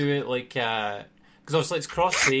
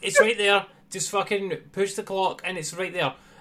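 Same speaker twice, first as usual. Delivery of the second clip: mock, high-pitched, frustrated, exasperated pleading; 5 semitones higher than usual. Retelling watching a replay of someone's game: retelling own screaming at screen. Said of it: "screaming at the".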